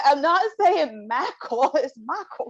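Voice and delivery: put-on high, insistent Southern accent. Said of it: "my Southern accent".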